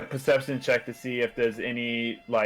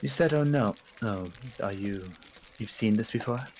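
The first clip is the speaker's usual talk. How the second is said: hushed whisper; 4 dB quieter than usual. Asking Davy in character so the halfling doesn't hear: whispering. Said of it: "I'm whispering this to Davy".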